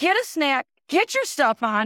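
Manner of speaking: barked, yelled voice. Telling of rushing her kids to get ready, a parent retelling own yelling. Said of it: "I'm yelling".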